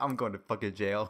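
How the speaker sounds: low, frightened voice full of dread. Speaker retells a friend's reaction to Blizzard lawyers, imitating someone scared. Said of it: "he was so scared".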